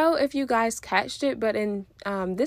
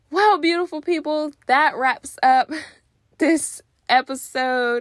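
winded, out of breath, higher pitch; 5 semitones higher, 6 dB louder than usual. Host wrapping up the episode for listeners, out of breath. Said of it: "I am out of breath".

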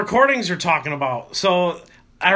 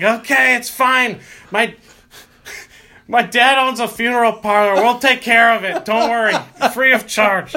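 mock reassuring tone in a mild calling yell; 4 semitones higher, 3 dB louder than usual. Retelling a bandmate's reply yelled up the stairs: imitating a friend yelling back. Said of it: "you yell back up".

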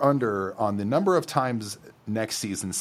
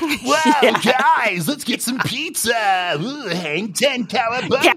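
very high, loud, stoked surfer-dude whoop; 10 semitones higher, 5 dB louder than usual. Describing the Ninja Turtles' casting, quoting Michelangelo in a surfer-dude voice. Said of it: "a surfer dude from, like, San Diego".

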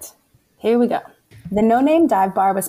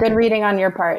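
ordinary delivery

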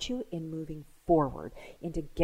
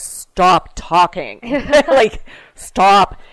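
booming, loud police-officer voice; 3 semitones higher, 17 dB louder than usual. Describing how the speaker stops people who start to say too much, in a cop voice. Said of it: "I use my cop voice and go".

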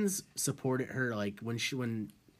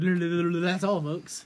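put-on cartoon pig voice, higher, louder, slower; 5 semitones higher, 5 dB louder than usual. Teasing the other speaker about sounding drunk in a sentence, in a Porky Pig voice. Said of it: "Porky Pig?".

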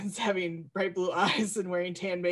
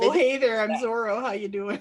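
loud, plain, unaccented-sounding Midwestern American voice; 3 semitones higher, 5 dB louder than usual.

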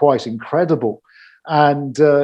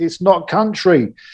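mock shouting, loud; 4 semitones higher than usual. Recalling watching a country special alone, retelling shouting at the screen. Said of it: "they're like shouting".

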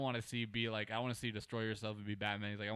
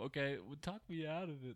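imitated cartoonish movie lion character voice; 4 semitones higher, 3 dB quieter than usual. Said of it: "however the fuck he talks".

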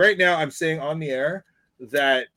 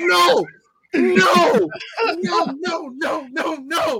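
very high, very slow, drawn-out screaming; 13 semitones higher than usual. Retelling pausing the video and screaming, acting out the scream. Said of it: "I'm like screaming".

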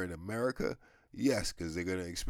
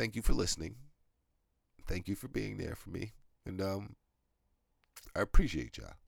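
choked-up voice on the edge of crying. Closing the podcast and thanking listeners, sounding about to cry. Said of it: "I sound like I'm about to cry now".

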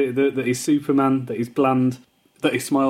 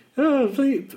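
mock insecure crying voice, higher; 12 semitones higher than usual. Retelling a scene of crying in the shower: mock crying as Triple H. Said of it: "real kind of insecure woman crying".

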